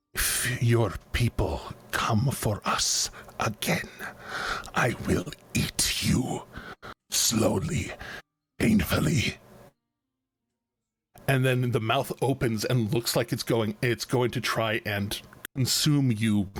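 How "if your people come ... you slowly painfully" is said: slow, menacing, over-articulated, every word enunciated. Voicing a giant glowing-eyed frog creature threatening a player: menacing, enunciating every word. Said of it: "his frog tongue just kinda enunciating every word".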